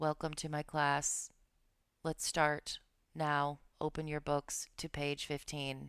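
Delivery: flat, level monotone with no energy or variation. Demonstrating a boring lecturer starting class, flat monotone. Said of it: "It sounds a little like this".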